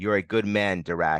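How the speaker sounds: ordinary delivery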